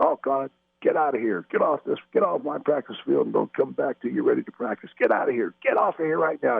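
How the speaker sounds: put-on hoarse, high, rough yell. Retelling how the coach yelled at the team to leave practice: Coach Lombardi yelling. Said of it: "Coach Lombardi starts yelling at us".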